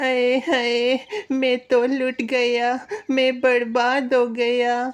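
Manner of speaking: tearful, high-pitched, sobbing, lamenting voice. Voicing a bird who was just robbed of food: crying. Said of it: "आप रो क्यों रहे हैं".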